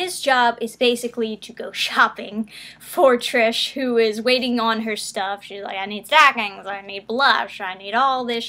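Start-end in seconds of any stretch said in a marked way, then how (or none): 5.8-8.5 mock-grouchy, griping, grumbling put-on character voice. Recapping an episode where Lancia shops for Trish, in a grouchy Trish voice. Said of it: "kind of like a grouchy voice when I do Trish".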